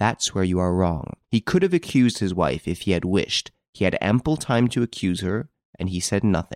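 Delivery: plain reading voice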